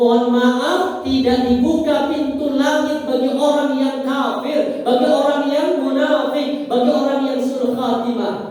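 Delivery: stern, high, loud proclamation.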